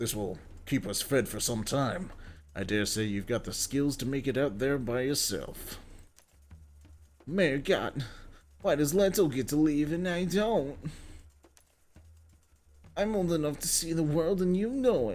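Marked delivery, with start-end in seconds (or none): 7.3-15.2 put-on high, whiny, complaining voice. Playing through a game, speaker voices a character's line in a whiny voice. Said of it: "I don't know why I decided to do that voice".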